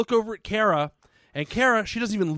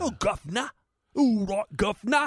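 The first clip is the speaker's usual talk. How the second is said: worst fake Cockney, put-on old British accent; 3 semitones higher than usual. Mocking a performer's accent from something filmed on set, doing a bad cockney accent. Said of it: "Like the worst Cockney fucking accent".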